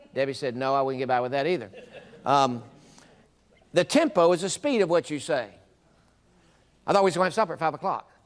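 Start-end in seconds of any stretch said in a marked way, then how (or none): 6.9-8.0 very fast, rapid delivery, much quicker pace. Demonstrating how tempo changes the same sentence, saying it real fast. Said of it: "I could say it real fast".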